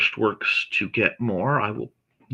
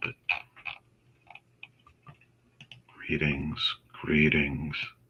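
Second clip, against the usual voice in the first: sinister-sounding voice, lower and quieter; 7 semitones lower, 5 dB quieter than usual. Returning a greeting: diabolical-sounding voice. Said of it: "that sounded diabolical".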